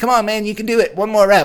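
very high, loud, cartoonish character voice. Retelling how a gym spotter cheered on a lift, in his cartoon voice. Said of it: "cartoon voice".

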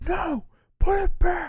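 shrieking, very high, drawn-out scream. Describing parents in a toy department screaming at their child; mock-screaming parent. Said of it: "the parents just scream their head off too".

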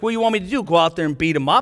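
mock-sarcastic tone. The speaker retells a sarcastic remark made to a kid on the team. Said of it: "I sort of sarcastically said to the kid".

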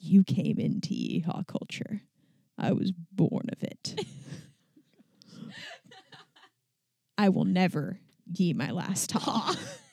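whispered, breathy masked movie villain voice. Talking about growing up in a family of horse trainers, Bane voice. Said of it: "got to do the Bane voice of".

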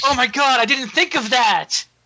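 high-pitched robotic villain voice. Retelling a scene with mock praise for Optimus: mock Megatron voice. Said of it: "Megatron's like".

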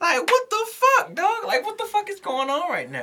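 very high-pitched, amazed, stunned exclamation. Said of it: "I'm like".

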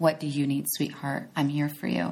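soothing, comforting voice. Showing how to comfort yourself when feelings are hurt: soothing voice. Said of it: "you be that soothing voice for yourself".

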